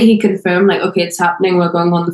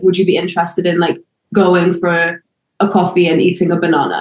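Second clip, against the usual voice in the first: plain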